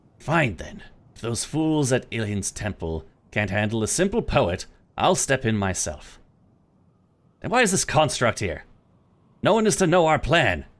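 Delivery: loud, angry female voice, rising. A woman's voice spills from the construct, woman's angry voice. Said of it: "what sounds like a woman's angry voice spills from the construct".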